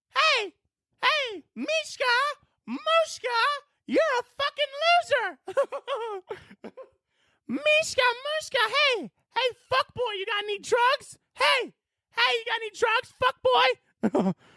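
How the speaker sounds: high-pitched, stretched out. Imagining Mickey Mouse suddenly in the passenger seat on the way to work, doing a Mickey Mouse voice. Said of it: "Mickey Mouse is just in your passenger seat".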